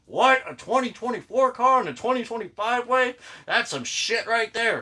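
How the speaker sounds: clumsy, high-pitched mock boomer caricature voice. Showing a diecast car, mimicking Facebook boomers complaining: bad boomer impression. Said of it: "That was a bad impression".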